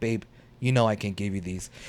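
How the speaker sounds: soft, utterly unbothered, perfectly calm. Retelling a movie scene where a character withholds keys: imitating a calm voice. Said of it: "Calm as can be".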